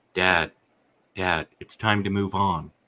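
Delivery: ordinary delivery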